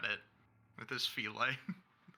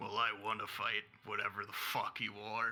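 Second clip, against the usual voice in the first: rough, gruff, cocky, brash defiant tone; 3 semitones lower than usual. A fighter answers a warning from a monster, defiantly saying he wants to fight it anyway. gruff defiance. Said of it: "This is when [name] hisses back at it with his feline. Actual, like hiss. Yeah. So at that point, it is now an imp and a spine devil's turn. Uh-oh. The spine devil looks at you, and it kind of / [name".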